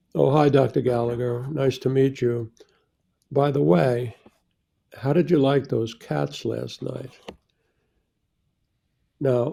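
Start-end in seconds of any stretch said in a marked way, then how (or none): none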